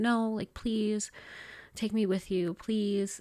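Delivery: imploring, beseeching, pleading voice. Recalling a blurry memory of asking him to take you along, retelling your own begging. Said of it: "I remember begging him and being like".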